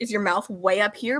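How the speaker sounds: ordinary delivery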